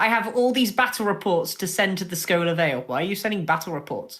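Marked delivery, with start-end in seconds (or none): none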